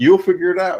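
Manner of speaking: mock amused, loud voice with a chuckle. Retelling a remark made to struggling children: imitating own chuckled remark. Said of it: "I kinda chuckled and was like".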